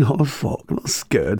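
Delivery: words spoken through nervous laughter. Speaker retells answering a man before a gig: acting out laughing nervously. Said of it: "Like laughing nervously".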